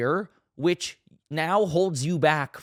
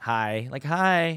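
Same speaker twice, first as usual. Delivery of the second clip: put-on bored, uninterested tone. Retelling how she answered his hey, imitating an uninterested hi. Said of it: "she just wasn't that interested".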